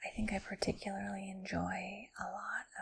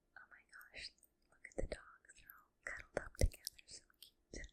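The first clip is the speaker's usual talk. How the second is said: put-on whisper. Retelling old videos sent to a friend: imitating own past whisper. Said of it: "even where I'm whispering things like".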